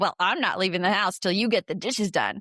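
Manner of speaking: snippy delivery laden with a bit of attitude. Showing how a request about the dishes might sound in the speaker's head: with an attitude. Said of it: "It might sound like that in my head because, uh, you know, I, I have a bit of an attitude".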